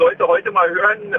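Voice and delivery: ordinary talk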